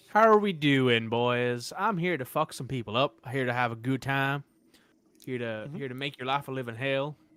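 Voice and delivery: put-on Southern accent. Speaking in character to enemies in a fight: put-on southern accent. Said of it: "I don't know why I'm going so southern".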